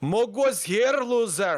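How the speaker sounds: put-on Irish accent. Reading out the message they just wrote, in an Irish-sounding accent. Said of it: "pretty Irish".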